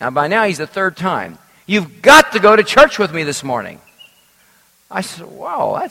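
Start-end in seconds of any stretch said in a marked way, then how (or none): 1.7-3.8 loud, booming, bombastic insistent delivery. Speaker retells a man repeating a demand for the third time, imitating his bombastic voice. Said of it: "he said with a bombastic voice".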